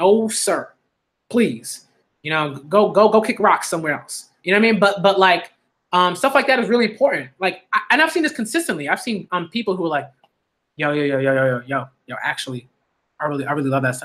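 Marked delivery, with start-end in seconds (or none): 10.8-14.1 mock whisper, lower. Imitating people who secretly admit they love wholesome shows: imitating someone whispering. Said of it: "why are you whispering?".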